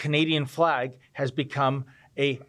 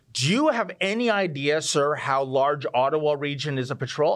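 mock patronizing, condescending, talking-down tone. Retelling what a police officer said: imitating a condescending tone. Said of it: "in a very condescending way".

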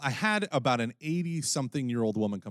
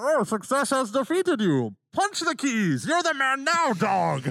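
put-on Scottish brogue, very high and loud; 13 semitones higher, 5 dB louder than usual. Speaker's Bane impression turns into a Sean Connery impression. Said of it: "it immediately becomes Sean Connery".

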